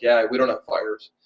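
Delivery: flat, deadpan delivery. Recounting a trade show exchange, the speaker replays his own answer, retelling a deadpan reply. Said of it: "I literally got like deadpan face".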